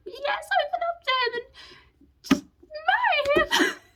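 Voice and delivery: very high, squeaky, excited cheering. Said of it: "and I was like".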